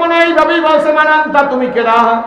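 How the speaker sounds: high, loud calling voice.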